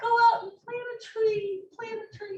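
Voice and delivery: sarcastic, mocking, very high and very loud. Retelling what city council people say: sarcastic imitation of council people. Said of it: "I'm sorry to be very sarcastic about that".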